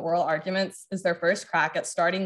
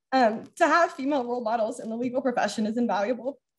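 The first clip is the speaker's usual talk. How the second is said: moved, emotional, pitched-up voice; 5 semitones higher than usual. Concluding remarks thanking the Delaneys, speaker getting emotional. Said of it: "I don't know why I'm so emotional".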